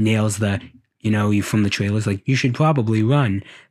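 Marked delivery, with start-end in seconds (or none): 2.3-3.4 put-on computerized, eerie, unsettling childlike robot voice. Quoting a line from the trailers: M3GAN's monotone computerized voice. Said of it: "The computerized voice, the monotone, scary, childish voice".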